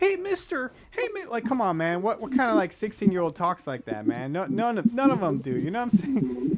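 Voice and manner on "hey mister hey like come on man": put-on innocent child voice, much higher. Mocking how the actor plays Spider-Man, imitating Tom Holland's innocent kid act. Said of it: "plays up the little like innocent kid thing".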